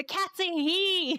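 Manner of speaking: mock very high, very slow, stretched-out yell. Retelling yelling at the screen while watching vods: imitating own past yelling. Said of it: "the whole time I'm yelling at my screen going".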